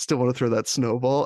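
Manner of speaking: ordinary talk, nothing marked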